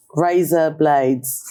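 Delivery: British English accent.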